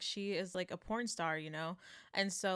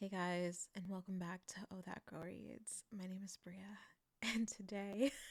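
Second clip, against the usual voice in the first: put-on sultry tone, quieter; 7 dB quieter than usual. Retelling how past podcast intros sounded: imitating own past sultry voice. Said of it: "you'll just hear me be like".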